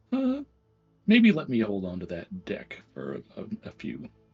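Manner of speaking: confidential, voiced stage half-whisper. Speaking in character, walking up next to Mitnir: half-whispering. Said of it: "sort of whisper to him and be like".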